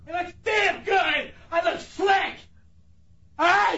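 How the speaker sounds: very high, furious, shrieking angry yell. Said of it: "How can you yell that much".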